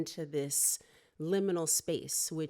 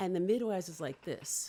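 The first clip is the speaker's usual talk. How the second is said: usual speaking voice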